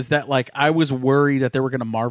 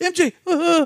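put-on high, stammering young-hero voice. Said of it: "That's a great Tom Holland impression".

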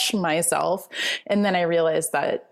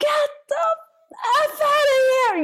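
acted out, shrieking, very high-pitched screaming. Retelling finding someone in the bedroom, retelling a scream. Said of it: "I start screaming like".

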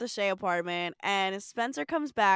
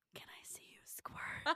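put-on whisper, quieter. Retelling how Spencer shushes Carly and whispers: imitating Spencer whispering. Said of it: "puts his entire hand over her mouth and whispers".

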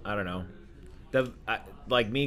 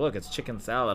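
ordinary delivery

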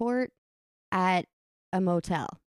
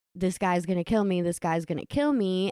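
ordinary delivery

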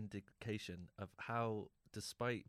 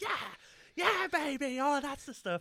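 very loud, very high faked passionate cries; 12 dB louder than usual. Retelling a scene where Frasier jumps on the bed: Frasier faking sex noises. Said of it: "faking all these sex".

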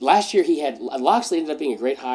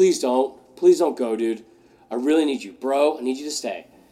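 put-on begging coach voice. Imitating the old coach begging an assistant not to leave: imitating Saban begging. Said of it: "Saban was like".

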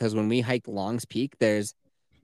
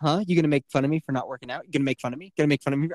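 put-on taunting tone at a higher pitch; 3 semitones higher than usual. Retelling how Kelsey keeps baiting the speaker: imitating Kelsey baiting. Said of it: "you were just baiting me".

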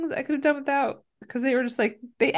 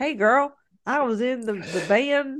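put-on, very slow Southern drawl. Imagining how a former boy-band member should have spoken, in a Southern accent. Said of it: "Southern accent?".

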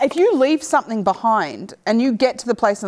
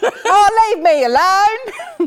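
put-on Cockney accent, very high and very drawn out; 10 semitones higher, 5 dB louder than usual. Imitating a game character after falling off a bridge: Cockney accent. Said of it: "She's Cockney".

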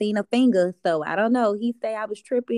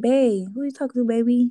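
put-on, sweetly coaxing, sugary sweet-talking voice; 3 semitones higher than usual. Retelling how a boyfriend tries to ease his question in, imitating a sweet tone. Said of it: "try to say it in a sweet way".

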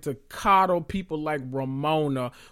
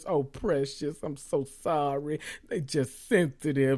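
mocking put-on voice, quieter; 2 semitones lower, 4 dB quieter than usual. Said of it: "act like her ears are, you know, just so sensitive".

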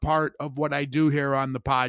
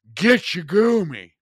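play-acted big, booming character voice; 4 semitones higher, 5 dB louder than usual. Retelling his line while looking out at Lake Superior, in a big booming voice. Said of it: "this big booming voice".

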